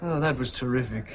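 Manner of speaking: dry, mocking, sarcastic tone. Role-playing being rude to the other person, sarcastic. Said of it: "I was being sarcastic".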